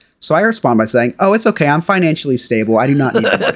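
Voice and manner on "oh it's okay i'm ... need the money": ordinary talk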